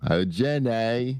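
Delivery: put-on Alabama accent. Explaining which voice they first thought the other person was doing, Forrest Gump Alabama accent. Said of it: "I thought it was like Alabama at first".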